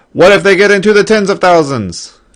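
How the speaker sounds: loud, high-pitched shouting. Speaker compares quiet talk with loud talk in a demonstration, yelling. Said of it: "Sorry for yelling in your ear".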